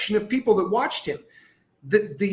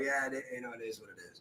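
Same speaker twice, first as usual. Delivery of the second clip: put-on gritted-teeth voice, lower and quieter; 9 semitones lower, 17 dB quieter than usual. Retelling a reply when people talk about him: imitating talking through gritted teeth. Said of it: "I grit my teeth and I go".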